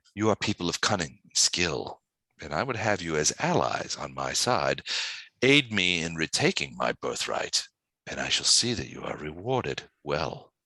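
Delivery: low, hushed voice. A woman in the story making an offer to her guests, in a lowered voice. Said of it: "She lowers her voice".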